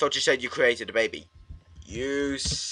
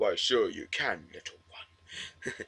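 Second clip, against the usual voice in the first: soft, wise, sage-like voice; 4 semitones lower, 7 dB quieter than usual. Repeating another speaker's reply back to them, in a wise-person voice. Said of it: "She sounds like one of those wise people".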